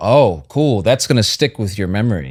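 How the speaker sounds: normal talking voice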